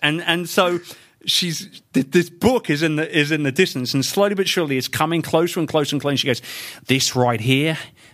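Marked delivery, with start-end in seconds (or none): 6.9-7.8 put-on Aussie accent. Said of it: "I'm gonna do an Aussie accent".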